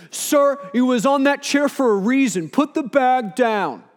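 loud booming voice. Retelling what a security guy said to the speaker, in a loud booming voice. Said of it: "this loud, booming voice go".

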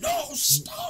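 high, loud angry yell.

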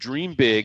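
ordinary talk

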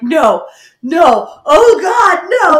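very slow, drawn-out, high, loud speech broken by laughter. Retelling own reaction to hearing a story: retelling own laughing protest. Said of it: "I am laughing so hard, I'm crying".

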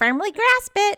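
very high, cartoon-pitched voice. Retelling the same replay: SpongeBob voice. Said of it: "And then SpongeBob goes".

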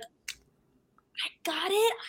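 put-on high, overjoyed, freaking-out, thrilled exclamation. Recalling learning of being cast as Summer, retelling freaking out. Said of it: "I was freaking out".

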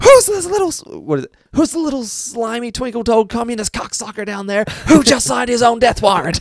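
play-acted very high, swooping, rising drill-sergeant screaming. Retelling how the head sergeant lost his mind, imitating the head sergeant screaming. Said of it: "That was the bit where I was like".

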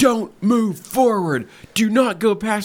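mock-angry yelling. Retelling what a guy shouted at them about a cone, mock-angry yelling. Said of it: "really angry".

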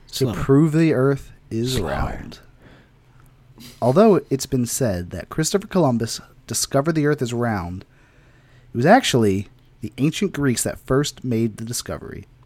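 smooth, sultry, super slow drawn-out narration. Asked to read the synopsis aloud, super slow, sultry and smooth. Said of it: "Super slow. Like, sultry, smooth".

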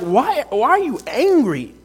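pleading tone. Voicing God asking Cain a question, acting out a father's pleading. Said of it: "Like a father pleading with his son".

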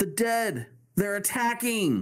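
shrill, very high, panicked alarm cry. Narrating a story as the town screams for help, guard shouting. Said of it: "Shouts a guard".

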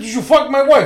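put-on Italian American accent, high-pitched and loud. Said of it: "I said".

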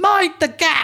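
slow, high-pitched loud shout. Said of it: "well known to regular travellers for loudly shouting".

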